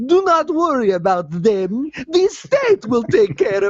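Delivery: hyper, wired cartoon vampire voice. Retelling what a man said to a kid in a story: Count Chocula on meth voice. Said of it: "like he's Count Chocula on meth".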